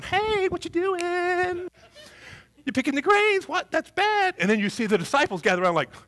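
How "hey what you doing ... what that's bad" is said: squeaky, very high little pipsqueak voice. Retelling a small Pharisee scolding Jesus: little pipsqueak voice. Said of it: "like this little pipsqueak going".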